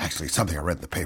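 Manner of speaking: fast, hushed, conspiratorial whisper. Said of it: "very conspiratorial".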